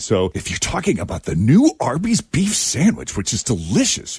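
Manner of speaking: animated but restrained, muted excited ad-style read. Explaining a tv voiceover technique, the speaker demonstrates muted, whispery enthusiasm. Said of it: "talk enthusiastically like this".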